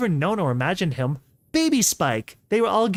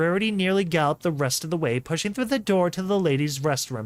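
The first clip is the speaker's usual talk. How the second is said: plain reading voice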